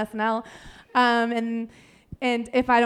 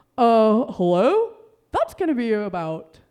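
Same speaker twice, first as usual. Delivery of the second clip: slow, drowsy, sleepy voice; 4 dB louder than usual. Doing a voiced bit, the speaker greets someone in a put-on voice. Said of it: "I have to get the voice".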